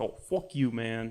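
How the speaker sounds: deliberate, unhurried, slow, drawn-out put-on voice. Repeating the voice just used for the movie star: imitating the Rock. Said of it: "I don't know why I gave him that voice".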